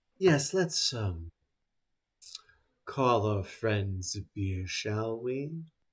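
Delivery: very hushed, airy, breathy voice. Voicing a woman who descends and walks over, in a breathy voice. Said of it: "with a breathy voice".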